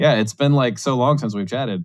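dry, ironic, tongue-in-cheek sarcastic tone. Greeting a returning co-author on the podcast: sarcastic. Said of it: "That's sarcasm".

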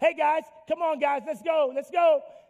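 shouted voice. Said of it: "I'm yelling".

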